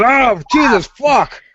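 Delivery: high-pitched cry. Acting out a man who wakes up in the morgue. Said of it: "he gets up and goes".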